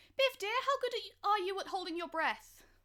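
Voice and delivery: high-pitched, called-out voice. Playing Frankie, calling out to Biff underwater: calling out as Frankie. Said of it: "call out".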